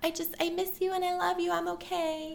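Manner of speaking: put-on soft little baby voice. Retelling Jan calling home, imitating Jan's tiny baby voice. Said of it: "in like the tiniest little baby voice".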